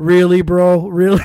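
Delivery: very loud, acted, disappointed and disbelieving tone. Retelling a podcast guest's reaction to a question: imitating someone disappointed. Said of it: "he was so disappointed".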